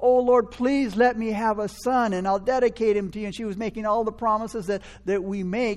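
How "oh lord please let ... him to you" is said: put-on weeping voice, pitched higher. Retelling a woman weeping before god, imitating her weeping. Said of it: "She was weeping before God".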